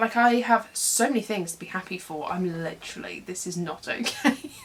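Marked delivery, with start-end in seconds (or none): 3.2-4.5 laughing through tears. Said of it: "emotional train wreck".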